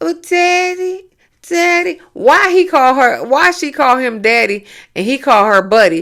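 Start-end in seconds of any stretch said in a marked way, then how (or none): 0.0-2.0 put-on high, cutesy, whiny baby voice. Mocking a woman who talks to her husband: imitating a baby voice. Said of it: "That little baby voice is not cute at all".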